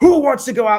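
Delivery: very loud, high, menacing, threatening bark. A parent recalls the coach calling out to kids at wrestling practice: mock-threatening coach tone. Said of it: "in a threatening tone".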